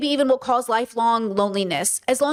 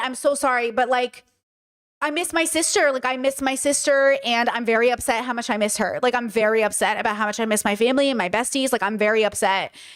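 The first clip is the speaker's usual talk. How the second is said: ordinary talk, nothing marked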